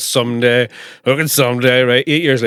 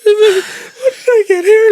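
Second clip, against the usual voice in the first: put-on very high, very slow, drawn-out weeping wail; 5 dB louder than usual. Retelling coming to in the shower after a blackout, imitating sobbing. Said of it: "like sobbing".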